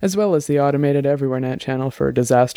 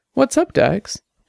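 very high voice with a light hint of surprise; 11 semitones higher than usual. A woman answers an urgent message by voice: hint of surprise. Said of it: "a hint of surprise in her voice".

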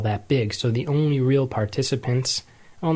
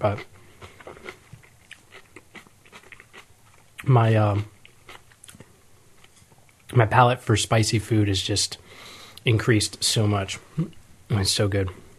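chewing while speaking, mouth full; 3 semitones lower than usual. Speaker eating spicy food while recording, talking while eating. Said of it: "I'm eating here".

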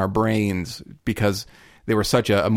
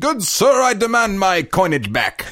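fake British accent, very high and swooping; 10 semitones higher, 4 dB louder than usual. Retelling what another person said at a counter, put-on British accent. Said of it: "with the British accent and everything".

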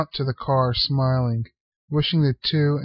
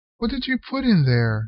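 wary, distrustful, suspicious, pitched up; 7 semitones higher than usual. Cliff, Unc's apprentice, questions him: suspicious. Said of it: "asked Cliff suspiciously".

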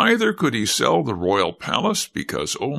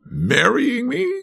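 very high, startled, surprised outcry; 12 semitones higher than usual. Reading a young king answering his counselor, cried out. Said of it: "cried the king".

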